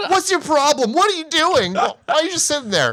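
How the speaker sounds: put-on exasperated, very high, furious outburst. Retelling how she reacts to a man just sitting there: imitating someone getting mad. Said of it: "She gets so mad".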